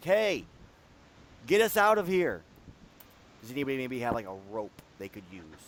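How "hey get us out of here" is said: loud, drawn-out yelling by a group. Voicing the group trapped in the pit calling up: yelling from a pit. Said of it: "you hear the rest of the group kinda yelling".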